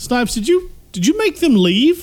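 high, rising surprised voice.

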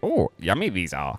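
slow, unhurried, drawn-out wise sage voice. Joking that E.T. picks up the sweets and talks in a Yoda voice. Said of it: "uses Yoda's voice and says".

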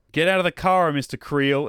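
calm, cool, commanding yell, acted. Retelling a show scene, imitating a character who yells at a car window. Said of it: "just yells at the window".

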